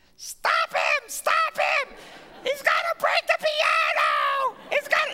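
mock very high, loud, slow, drawn-out scream. Retelling a resident's reaction to the speaker playing piano, retelling a resident screaming. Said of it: "one of the residents just starts screaming".

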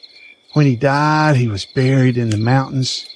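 plain

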